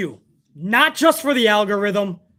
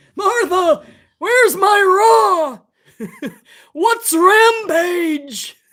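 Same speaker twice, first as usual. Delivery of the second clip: shrill, high, put-on old man voice, my stretched out; 10 semitones higher, 4 dB louder than usual. Joking about a man just seen with another coffee, in an old man's voice. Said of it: "Old man's voice".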